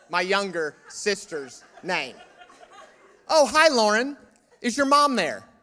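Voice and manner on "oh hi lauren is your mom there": mock cheerful, sarcastic, higher and louder. Retelling how callers mistook him for his sister: sarcastic imitation of a caller. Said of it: "I'm loading on the sarcasm on that one".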